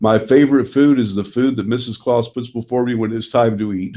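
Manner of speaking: usual speaking voice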